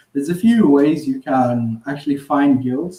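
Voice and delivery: ordinary talk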